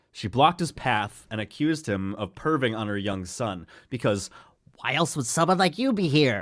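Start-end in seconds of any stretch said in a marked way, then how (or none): 3.9-6.5 high, crazy, unhinged voice. Reading a story of a woman confronting a man on holiday, crazy Karen voice. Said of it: "That's the voice crazy. I decided to give her".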